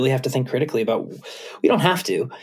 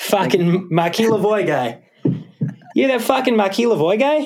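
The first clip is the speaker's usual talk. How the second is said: put-on Boston accent, pitched high; 8 semitones higher than usual. Asked how to say a name in a Boston accent, speaker tries it: Boston accent. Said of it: "How do you say that in a Boston accent?".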